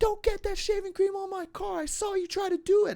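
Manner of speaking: very high, shrill, accusing shriek. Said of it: "this lady who's screaming at me".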